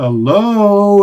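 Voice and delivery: high, loud yelling call.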